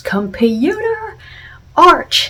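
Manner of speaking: very high, loud yell with voice cracking. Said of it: "he yells".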